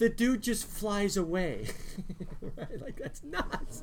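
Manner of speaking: soft talk, words breaking up with laughter. A teacher talking to students about the bible: laughing while talking. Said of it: "Sorry, I'm laughing".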